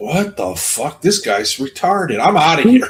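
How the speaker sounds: voice of a mountain lion. Imagining a mountain lion meeting a growling hiker: voicing a mountain lion. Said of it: "The mountain lion would probably, like, stop and like".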